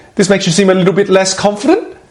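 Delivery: questioning rise in pitch on final word "confident". Showing how ending sentences high sounds like a question; rising pitch at the end. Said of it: "if you end your sentences on a higher pitch, notice what happens? Is that everything I say sounds a bit like a question?".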